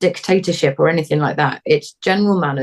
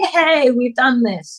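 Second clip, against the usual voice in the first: delighted, excited, high and drawn-out happy cheer; 8 semitones higher than usual. Demonstrating how owners praise their dogs, excited, happy praise. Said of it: "we get all excited and we smile".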